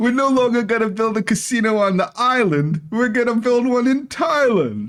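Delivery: high, loud mock New York accent.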